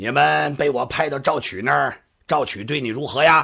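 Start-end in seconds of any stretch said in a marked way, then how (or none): none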